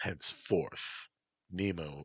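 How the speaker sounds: ordinary delivery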